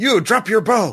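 shrill, very high goblin voice shouting. Voicing one of six goblins that yells at a player's character: goblin yelling. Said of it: "One of them yells at you".

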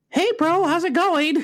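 squeaky, very high adolescent mid-puberty voice. Retelling how an ODST guy talked, in a voice mid-puberty. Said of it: "like he hadn't quite finished puberty yet".

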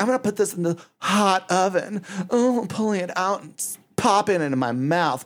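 high, sultry, seductive voice. Describing a cooking show host, mimicking her talking like a porn star. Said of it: "she's talking like a porn star".

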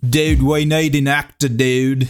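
put-on casual dude Australian accent. Friends riffing on a reenactment, saying the line in australian accent. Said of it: "how do they say it in Australian?".

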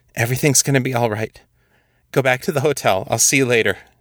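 shaky, hurried voice trembling throughout. Narrator reads Barbara forcing out lies to Zelda: voice shaking. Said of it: "her voice shaking as she forced out the lies".

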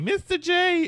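very high, loud fangirl squeal.

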